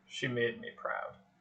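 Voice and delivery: low, deep rumbling voice, hushed and breathy, near whisper. Narrator voices a voice rising as players pass under a fiery giant, deep rumbling voice. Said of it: "a deep, rumbling voice comes up".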